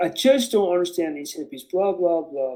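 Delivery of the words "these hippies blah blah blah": normal talking voice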